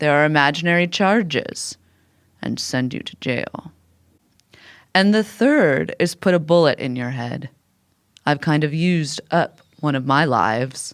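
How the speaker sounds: ordinary delivery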